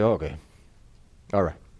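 mock reluctant, grudging, graceless, joyless tone. Showing the wrong way to answer someone asking forgiveness: grudging, joyless tone. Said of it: "as if it is a burden to forgive someone".

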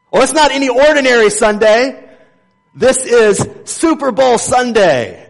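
high, loud, mocking gush.

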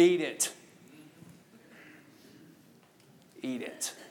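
low, slow, hushed voice, near whisper. Showing how a parent answers a complaining kid: lowered voice. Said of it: "You gotta lower the voice".

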